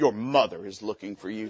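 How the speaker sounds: very low, deep, hushed villain voice. Retelling the page calling him to the front register, in a Darth Vader voice. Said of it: "Sound like Darth Vader".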